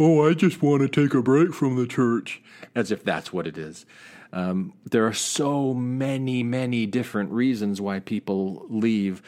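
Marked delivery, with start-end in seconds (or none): 0.0-2.4 put-on cartoon puppet character voice, like kids' TV. Mocking people who say they are leaving the church, Sesame Street character voice. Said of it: "turn into like a character Sesame Street voice and go".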